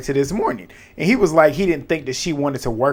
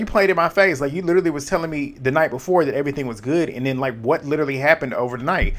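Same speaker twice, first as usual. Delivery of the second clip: normal talking voice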